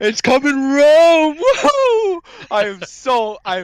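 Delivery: very loud, very high, swooping, whooping excitement. Answering a request to say it with excitement this week: said with excitement. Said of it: "you gotta say it with excitement this week".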